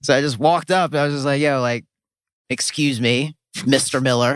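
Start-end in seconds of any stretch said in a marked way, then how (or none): 1.4-4.4 very polite, casual, friendly-sounding delivery. Retelling walking up to ask a question, imitating own polite address. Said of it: "Very polite".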